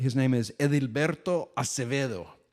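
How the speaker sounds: on-point Spanish accent. Telling a co-host the name of a farmer visited in Colombia, with an on-point Spanish accent. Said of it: "That accent is on point".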